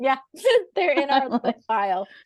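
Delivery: high, giggling, laughing through the words.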